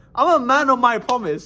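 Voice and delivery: cracking, breaking voice going up high. Retelling leaving a group, the speaker insists he meant his promise, voice cracking. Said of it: "Voice crack".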